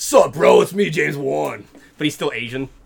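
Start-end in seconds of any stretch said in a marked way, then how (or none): 0.0-1.6 loud, slow, rough, booming gym-bro voice. Joking that a film director got huge on steroids: James Wan as a jacked gym bro. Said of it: "He's like".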